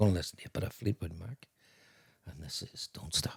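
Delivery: soft, hushed, breathy whispered radio DJ voice. Chatting about old radio presenters, a speaker does a whispery Terry Wogan radio voice. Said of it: "That's the way he spoke on the whispering".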